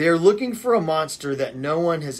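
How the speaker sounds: plain reading voice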